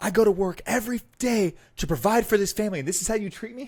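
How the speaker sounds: mock, shrill, very high screaming. Retelling a funny clip of a guy off camera: imitating someone screaming. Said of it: "He's screaming off camera".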